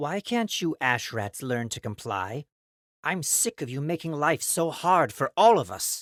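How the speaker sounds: high, whining, nagging, grumbling voice. A male voice breaks over the crowd, complaining at the ashrats in a whiny voice. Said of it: "A whiny male voice broke over the crowd".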